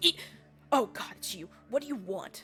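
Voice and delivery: startled, jumpy, frightened, caught off guard. Narrating a character who half jumps when someone approaches him, startled and scared. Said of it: "he kind of like goes".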